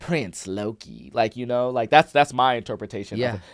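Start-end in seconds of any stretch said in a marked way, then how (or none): 0.0-1.1 terrible villain voice with a little cackle. Describing how a character sounds to a listener, terrible Loki impression. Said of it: "I'm gonna be a very terrible uh voice actor right now".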